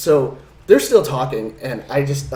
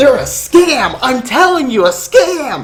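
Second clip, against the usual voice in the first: very slow, pushy, loud, high, drawn-out yelling; 11 semitones higher, 8 dB louder than usual. Telling how a man stood up and yelled at them: retelling a guy's yelling. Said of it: "he's yelling at us".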